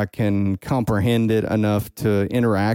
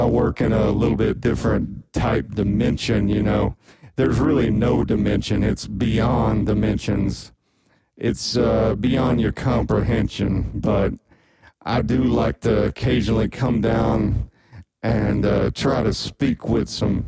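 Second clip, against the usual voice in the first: put-on voice, much deeper. Playing God answering an interviewer's questions: much deeper God voice. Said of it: "but just with a much deeper voice".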